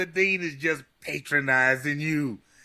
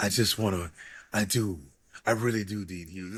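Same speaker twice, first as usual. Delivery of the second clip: put-on smoky voice, much lower; 8 semitones lower, 3 dB quieter than usual. Acting out what a woman said, in her smoky voice. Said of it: "this smoky voice".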